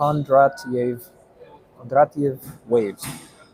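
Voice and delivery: put-on Russian accent throughout. Explaining economic cycles, the speaker says the economist's name in a russian accent. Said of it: "I said it in a Russian accent".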